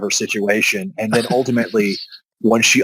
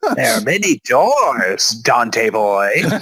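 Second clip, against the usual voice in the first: bad, hammy cartoon voice with swooping sing-song pitch. Recapping an episode, doing a Rolf impression. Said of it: "It's a terrible Rolf impression".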